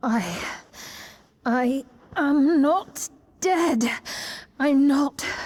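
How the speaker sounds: doubtful, unconvinced voice. Insisting she is not dead: trying to convince herself. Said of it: "You sound like you're trying to convince yourself".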